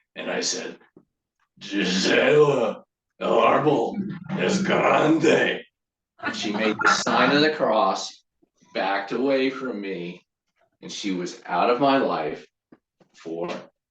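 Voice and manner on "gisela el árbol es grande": demonic devil voice, very slow and drawn out. Retelling how he once said a Spanish phrase to a woman: devil voice. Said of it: "say it in kind of a devil voice".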